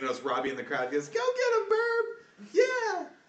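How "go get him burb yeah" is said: put-on very high, slow, drawn-out small child voice. Narrator voicing Robbie, a little kid in the crowd, little kid voice. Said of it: "a few of the little kids".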